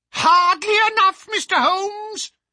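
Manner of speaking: very high, shrieking, screaming cry. The old man answers mr. holmes in a high, screaming voice. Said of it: "the old man cried in a high, screaming voice".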